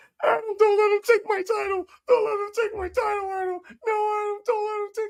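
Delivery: shrill, sobbing, pleading whine, very high and loud. Retelling a backstage scene of MJF being escorted, imitating MJF crying. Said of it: "him crying like a little bitch".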